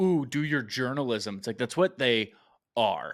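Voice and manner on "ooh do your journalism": mock belittling, condescending, patronizing tone. Complaining about how people talk down to journalists, mock-condescending tone. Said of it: "use that condescending".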